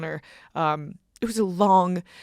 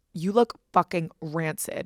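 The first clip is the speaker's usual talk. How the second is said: put-on angry voice; 2 semitones lower than usual. Retelling their mom's reaction after a night out, imitating an angry mom. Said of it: "She's so mad at me".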